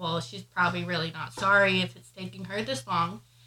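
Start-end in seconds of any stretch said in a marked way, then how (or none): none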